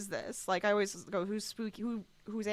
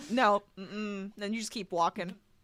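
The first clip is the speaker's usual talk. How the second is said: normal talking voice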